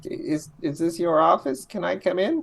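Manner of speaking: small, little, high squeaky voice. In an improvised scene, a character at an office door asks to come in, in a little squeaky voice. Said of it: "A little squeaky voice".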